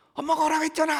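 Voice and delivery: loud yelling.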